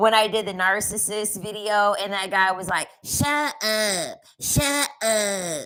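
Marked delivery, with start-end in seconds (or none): 3.0-5.7 very slow, very sassy voice. Retelling how a guy in a video kept saying it: imitating a sassy voice. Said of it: "He sounded sassy as hell".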